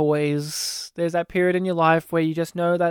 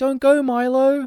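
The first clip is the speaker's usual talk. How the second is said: put-on high, childlike kid voice; 7 semitones higher, 3 dB louder than usual. Retelling how a sister quotes a movie scene: imitation of the kid's voice. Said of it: "in an imitation of his voice".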